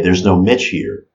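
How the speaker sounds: ordinary talk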